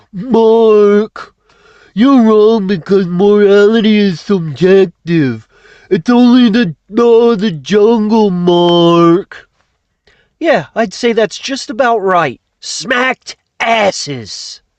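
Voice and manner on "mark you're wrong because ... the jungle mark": slower, mocking put-on voice. Speaker imitates someone telling Mark he is wrong, in a mocking put-on voice. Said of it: "let me see if I can just get the voice just right".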